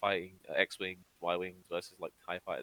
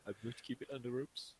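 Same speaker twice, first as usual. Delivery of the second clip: put-on Kiwi accent, higher and quieter; 5 semitones higher, 10 dB quieter than usual. Imitating Taika Waititi as Korg, keeping secrets: Korg voice. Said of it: "Taika Waititi's like".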